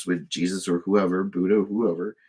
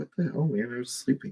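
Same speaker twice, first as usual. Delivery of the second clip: pitched-up put-on house cat voice; 6 semitones higher, 5 dB quieter than usual. Voicing the cat Luna, just woken up by the other cat: voicing the cat Luna. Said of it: "She's like".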